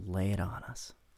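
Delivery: creepy, eerie, breathy, very hushed voice. Inviting a co-host to share a fix, in [name]'s weird creepy breathy voice. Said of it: "in a weird, creepy, breathy way".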